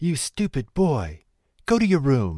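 furious, loud, angry outburst. A mother, furious that her son traded for beans, cries out angrily. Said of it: "she cried".

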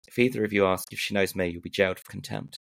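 very quiet, menacing put-on voice. Retelling the judge's warning to both lawyers at the bench, quiet menacing threat. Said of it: "A very quiet voice said with menace".

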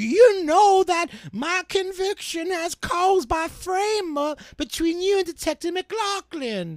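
put-on very high-pitched, old-timey prospector character voice. Reading aloud a letter, in an old-timey prospector voice. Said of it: "I think we have an old-timey prospector".

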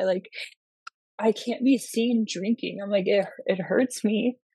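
close to crying, voice on the verge of tears. Speaker explains not wanting to be seen drinking in downtown Orlando, on the verge of tears. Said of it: "I'm like about to cry".

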